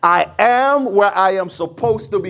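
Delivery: fervent, heartfelt, passionate tone full of conviction. Leading the audience in a declaration, with more passion. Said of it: "say that with a little bit more passion".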